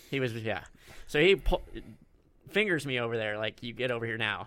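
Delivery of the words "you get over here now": aggressive, belligerent voice, quieter. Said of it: "Aggressively. I was belligerent".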